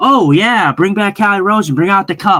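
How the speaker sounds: all sarcasm, scoffing and mocking. Recalling everybody's reaction to a move, retold sarcastic mockery. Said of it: "Everybody was all sarcastic".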